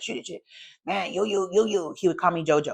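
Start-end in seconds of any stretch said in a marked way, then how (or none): 0.0-1.9 raspy, creaky, rough voice with repeated patter. Retelling what the father-in-law said the morning after drinking: imitating his way of talking. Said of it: "He would talk like that".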